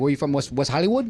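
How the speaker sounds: heavy, thick, laid-on put-on Spanish accent. Retelling what a ring announcer asked: imitating thick Spanish accent. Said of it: "who had a very thick, you know, Spanish accent".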